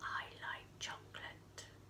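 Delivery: tiny, very quiet, almost silent whisper. Playing a guessing game with listeners, repeating a phrase: little quiet voice. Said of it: "I'm going to say it again".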